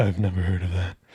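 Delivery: low, mock groveling voice.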